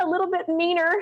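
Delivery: high-pitched, tearful laughing through tears.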